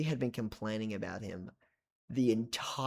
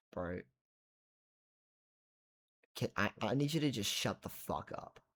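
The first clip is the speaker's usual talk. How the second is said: kindly, sincere, polite delivery, as friendly as possible; 5 dB quieter than usual. Retelling telling a guy to shut up, saying it as nicely as possible. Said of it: "in the nicest way I can".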